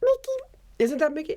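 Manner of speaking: very high, squeaky put-on voice. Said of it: "Do Mickey Mouse".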